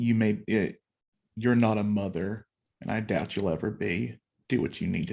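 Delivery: whispering with dead seriousness. Voicing Lilith getting in an opponent's face: whispering with dead seriousness. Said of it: "whisper to you with dead seriousness".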